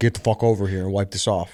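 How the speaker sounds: put-on angry demanding tone. Retelling how the guy demanded the buddy wipe it off: imitating a demanding order. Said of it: "he demanded".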